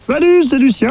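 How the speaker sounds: high, silly, put-on little voice.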